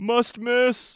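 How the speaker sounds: high, biting, sardonic sarcasm. Recalling a movie theater bit about bad trailers, the speaker performs it; mock-sardonic voice. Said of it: "in the most like sardonic voice I could muster".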